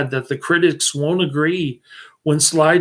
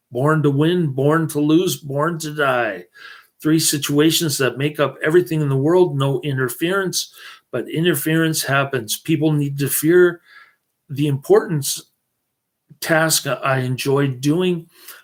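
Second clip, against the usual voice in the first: normal talking voice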